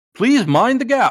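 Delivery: very high train-conductor announcement voice. Speaker describes a character whose gimmick is talking like a conductor; train conductor voice. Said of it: "talking like a conductor would talk".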